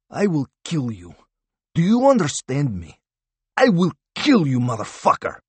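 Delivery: high, swooping, hissed through the teeth. Narrator voicing the Russian answering Harvath about his family: hissed. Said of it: "he hissed".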